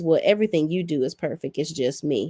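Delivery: plain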